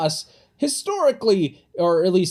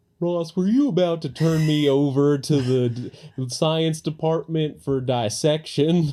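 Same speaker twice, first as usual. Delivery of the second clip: put-on Southern US accent character voice; 2 semitones higher than usual. Retelling a scene, the speaker voices Barney talking to Ross: Barney voice with southern accent. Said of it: "Why has he got a southern accent?".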